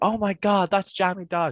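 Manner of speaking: play-acted, very high, excited shriek. Retelling someone on the street spotting the speaker: imitating someone screaming.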